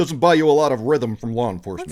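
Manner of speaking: smooth, slick TV newsman voice. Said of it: "That's a good impression".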